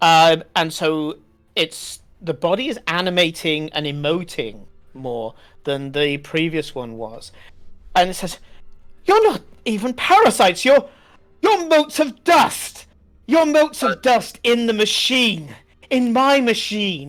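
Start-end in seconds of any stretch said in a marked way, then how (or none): 9.0-17.1 put-on posh voice, higher pitch. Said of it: "the posh voice of the character".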